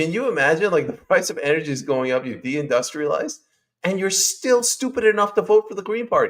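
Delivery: worked-up, heated, animated, high-pitched rant. Speaker telling 'you guys' about the uk green party rising in polls, getting animated. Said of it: "sorry I'm getting animated".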